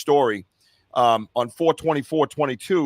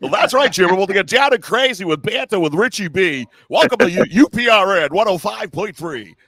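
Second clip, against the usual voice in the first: loud, high, on-air radio DJ voice; 7 semitones higher, 6 dB louder than usual. Co-host doing an on-air bit, radio announcer voice. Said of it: "that's my radio voice".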